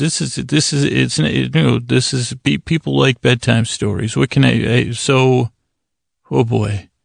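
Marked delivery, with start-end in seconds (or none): none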